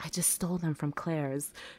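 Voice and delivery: hushed, giddy half-whisper. Speaker retells telling her friend's younger sister outside; half-whispered. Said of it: "I just like whispered to her".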